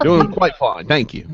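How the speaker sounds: poor attempt at an English accent, pitched high. Answering whether they're doing okay over there, in a bad English accent. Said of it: "I'll do a bad English accent".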